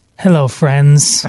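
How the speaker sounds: polished TV announcer delivery. Imagining the devil greeting everyone at the end: Jim Nantz voice. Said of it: "best Jim Nantz voice".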